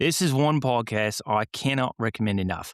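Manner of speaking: put-on Australian accent, best effort. Reading a podcast review aloud, attempting an australian accent. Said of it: "Chris will read it in his best Australian accent".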